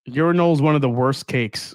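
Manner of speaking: plain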